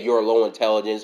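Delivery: normal talking voice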